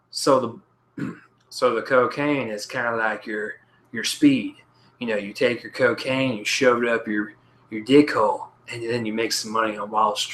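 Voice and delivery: put-on, deliberately terrible Texan accent. Imagining an actor from the movie talking about cocaine: terrible Matthew McConaughey impression. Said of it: "that's a terrible impression".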